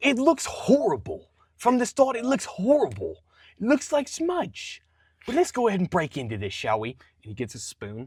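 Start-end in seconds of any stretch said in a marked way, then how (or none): 0.0-6.9 swooping put-on British accent, very high and loud. Imitating a guy in the uk trying biscuits and gravy: british accent. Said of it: "British impression of someone do-, eating biscuits and gravy".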